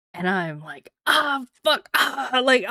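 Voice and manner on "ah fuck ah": put-on sudden pained groan, pitched up. Retelling the moment the pain started: retelling own pained groaning. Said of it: "I'm in pain".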